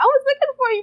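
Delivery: put-on high, loud child's voice, childlike.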